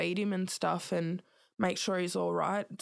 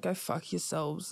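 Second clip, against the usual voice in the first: mock mumble under breath, lower pitch; 2 semitones lower than usual. Retelling what they said when warned the visit would be cut short, retelling a mumble under breath. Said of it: "i just mumbled under my breath like".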